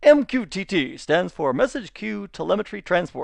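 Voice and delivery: stagey, put-on announcer-style moderator voice. Reading a hover-over definition aloud in a best moderator's voice. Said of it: "In my best moderator's voice".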